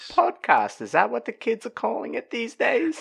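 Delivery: very high, creaky voice with swooping pitch. Imitating the other speaker's mum during a retold conversation: mum impression. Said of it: "that's my mum impression".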